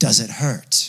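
low, dark demonic voice. Recounting the voice heard in the room at one in the morning, demonic dark voice. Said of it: "Like a demonic, dark voice".

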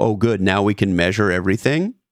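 ordinary delivery

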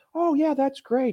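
very high, soft, manipulative cooing voice. Describing Bill Gates's way of talking, doing his soft, manipulative voice. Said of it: "soft, manipulative voice".

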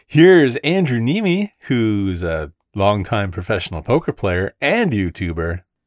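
ramped-up, swooping high-energy hype delivery, very slow, drawn out. Introducing a poker player and YouTuber with high-energy inflection. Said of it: "use that inflection in my voice, you know, to really ramp up the energy".

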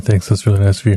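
smooth radio announcer voice. Thanking listeners for reviews, a host replies in an NPR announcer voice. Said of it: "now you make it sound like we're on NPR".

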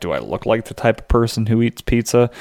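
normal talking voice

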